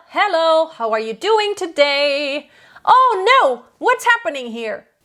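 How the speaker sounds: full chest voice. Demonstrating the everyday speaking register in full chest voice. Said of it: "That is full chest voice".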